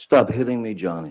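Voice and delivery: high-pitched, freaked-out, upset scream. Retelling a scene watched from twenty feet away, imitating Miss Heard's freaked-out scream. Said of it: "screaming in in her best um, freaked out, upset voice, high pitched".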